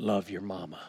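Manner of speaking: put-on marine voice with prophetic preacher tone. Recounting what a man said to him, in a marine voice, preacher prophetic tone. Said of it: "with that marine voice, with that preacher prophetic tone".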